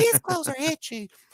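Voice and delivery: very high, dopey cartoon kid voice. Repeating a line the way he wanted it said: Ralph Wiggum voice. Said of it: "I wanted it in my like Ralph Wiggum voice too".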